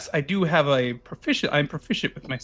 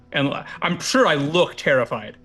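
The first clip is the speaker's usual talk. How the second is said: ordinary talk, nothing marked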